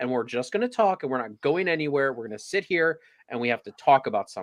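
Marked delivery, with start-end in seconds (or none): none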